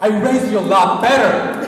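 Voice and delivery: loud, high stern father voice.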